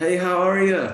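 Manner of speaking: put-on Irish accent. Retelling meeting a colleague in the teacher's room: imitating Tom's thick Irish accent. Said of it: "And he has a thick Irish accent".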